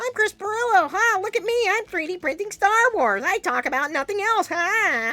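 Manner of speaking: own voice pushed very high, caricatured. Showing how easy their voice is to imitate: self-impression pitched up a few notches. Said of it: "go up a few notches".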